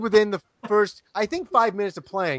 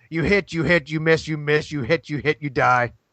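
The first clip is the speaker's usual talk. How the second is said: imitated voice, much slower; 4 semitones lower than usual. Retelling how Rob ran the game when a monster appeared: imitating Rob's voice. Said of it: "I'll try to do it the way fucking Rob does it".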